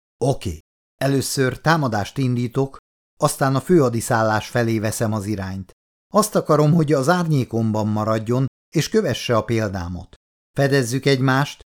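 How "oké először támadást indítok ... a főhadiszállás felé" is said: plain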